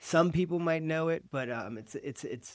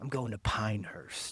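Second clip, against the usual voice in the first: soft, subtle, smooth, soothing cool voice; 3 semitones lower than usual. Showing how the place name should be said: cool voice. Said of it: "your cool voice".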